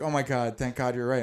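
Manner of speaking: put-on frantic, teary, panicked voice, crying. Retelling a phone call from mom, imitating mom freaking out. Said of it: "she's freaking out".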